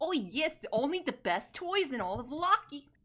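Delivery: put-on soft, hard-to-place accent, maybe Russian. A shopkeeper answers newcomers who noticed the shop, in an unplaceable New York-Slavic accent. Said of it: "I can't tell if it's Slavic".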